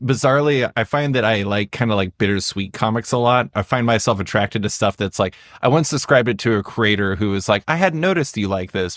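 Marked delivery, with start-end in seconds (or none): 7.7-9.0 high, very sarcastic, dripping with sarcasm. Retelling what a comic creator said back to her, retelling a sarcastic remark. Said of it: "very sarcastically".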